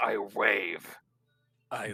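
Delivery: low, edgy, brooding edgelord voice. Imitating a player's dramatic line: edgelord voice. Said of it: "edgelord voice".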